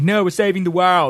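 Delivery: put-on English accent. Acting out their own reply to him, in an english accent. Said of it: "That's my English accent".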